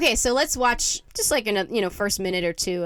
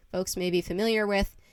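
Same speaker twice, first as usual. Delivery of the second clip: usual speaking voice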